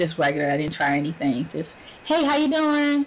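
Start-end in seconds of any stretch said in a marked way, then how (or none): 2.1-3.0 friendly, polite professional voice, higher pitch. Woman recalling how she greeted people at a job interview, in her work voice. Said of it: "That's my work voice".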